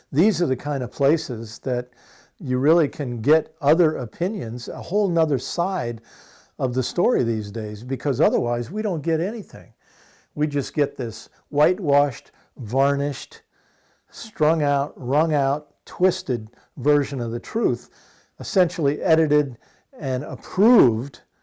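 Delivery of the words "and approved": approved drawn out slow and louder. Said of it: "emphasis on the word approved".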